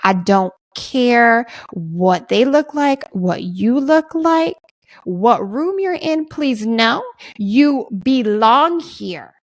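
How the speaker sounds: very slow, earnest, each word given weight.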